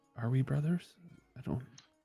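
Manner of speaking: quiet whispering. Asking another character, in a hushed aside, whether they are brothers: whispering in character. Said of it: "kinda whisper".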